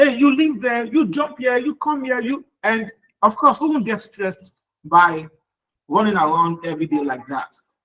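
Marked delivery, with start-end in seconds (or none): 0.0-2.5 mock screaming, yelling voice. Talking about classroom management, the speaker acts out a teacher, imitating a screaming teacher. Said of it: "she's screaming at the top of her voice".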